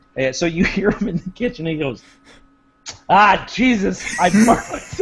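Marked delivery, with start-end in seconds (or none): 3.1-5.0 put-on very slow, loud, drawn-out New York accent. Imitating his dad in the kitchen after burning something, New York accent. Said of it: "he's got this New York accent".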